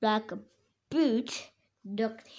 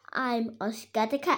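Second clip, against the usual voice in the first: ordinary delivery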